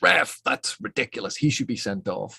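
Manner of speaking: mild, contained mock yell. In a made-up example at a sporting event, retelling a fan's scream. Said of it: "Anthony gets up and screams".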